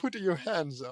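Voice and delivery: playacted, put-on Italian accent. A character whose voice keeps changing switches accents: italian accent. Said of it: "Italian accent?".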